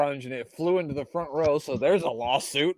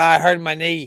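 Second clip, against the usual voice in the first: loud, slow, failed put-on Boston accent; 8 dB louder than usual. Commentating, quoting a man who hurt his knee: bad Boston accent. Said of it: "I can't do a good Boston accent".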